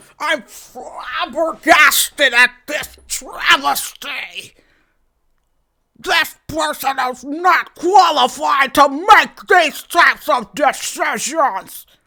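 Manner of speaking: put-on crotchety old man voice. Acting out a person who rejects a new strategy: old crusty man voice. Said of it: "Can't keep the spit in his mouth".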